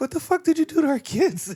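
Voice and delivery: angry, very high, shrill-pitched shrieking outburst.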